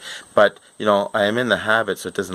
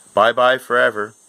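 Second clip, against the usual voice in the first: mock dry, expressionless deadpan, flat and level; 4 semitones higher, 4 dB louder than usual. Retelling what a man in line told him, imitating a deadpan delivery. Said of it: "real deadpan".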